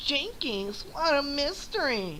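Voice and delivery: very high, swooping, deliberately bad cartoon voice. Ending a run of Scooby-Doo impressions with a Velma voice. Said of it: "That was my Velma".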